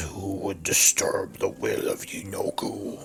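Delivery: quiet, guttural, growling orc creature voice. Game master voicing a large orc creature to the players, growling orc voice. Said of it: "And he growls".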